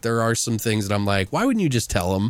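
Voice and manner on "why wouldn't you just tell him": usual speaking voice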